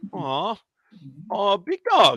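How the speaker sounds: voice cracking. Taking the Lions when called next in line, voice cracking. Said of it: "my voice cracked for the big dog".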